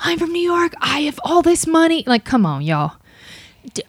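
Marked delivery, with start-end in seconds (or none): 0.0-2.0 shrill, loud shouting yell. Retelling what a customer who was yelling said: imitating a customer yelling. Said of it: "because he's yelling so loudly".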